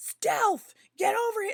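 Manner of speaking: angry yell. Testing a dog name, the speaker shows how it sounds in an angry yell. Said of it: "Or if I'm angry".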